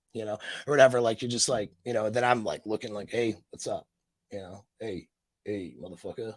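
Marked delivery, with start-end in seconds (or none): 3.1-6.4 hushed, low, very quiet, unfriendly and menacing. Speaker on camera showing how not to greet someone: unfriendly greeting. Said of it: "that's not exactly a good friend signal".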